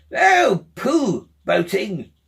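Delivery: loud, disgusted outburst. A narrator reads the Toad interrupting the Rat, in great disgust. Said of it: "in great disgust".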